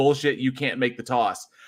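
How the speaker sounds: ordinary delivery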